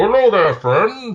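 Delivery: very high voice, as if sealed in a helmet. Imitating Solaire's greeting from the game: Solaire voice sounding inside a helmet. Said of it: "make the voice sound like it's in his helmet".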